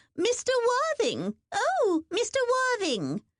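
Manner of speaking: shrill, very high-pitched called-out voice. Reading a novel, the narrator voices a woman calling after Mister Worthing: Hester Darby's shrill call. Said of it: "called out in a shrill voice".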